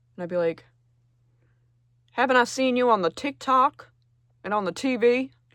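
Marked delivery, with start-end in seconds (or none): 2.1-5.2 put-on slow, raised, old Southern person drawl. Playing a parent meeting a child's famous girlfriend: old Southern person voice. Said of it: "I just became an old Southern person".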